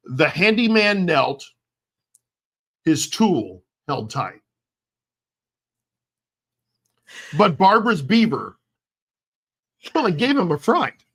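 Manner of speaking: slow, theatrical, dramatic storybook narration. Reading a rhyming story aloud to another speaker: dramatic reading voice. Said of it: "I'm trying to do dramatic reading".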